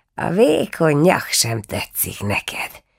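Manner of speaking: laughing mutter, chuckling murmur. An old woman answers the anxious boy, muttering with a laugh. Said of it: "mormogta a vénség nevetve".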